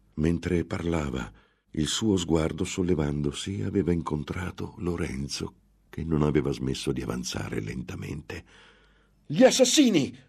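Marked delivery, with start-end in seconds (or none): 9.2-10.0 very high, loud, piercing shriek. In a read story, a woman sees Lorenzo approaching, screaming. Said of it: "urlò".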